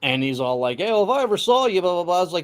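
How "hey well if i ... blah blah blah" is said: put-on English accent. Retelling what a man online said to the speaker, in an English accent. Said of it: "You could tell an English accent".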